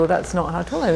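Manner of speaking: ordinary talk, nothing marked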